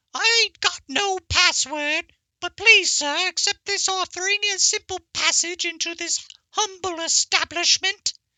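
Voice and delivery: very high-pitched, squeaky voice. Player speaking as their character Kanker, Kanker's squeaky voice. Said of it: "Kanker pipes up his squeaky voice and says".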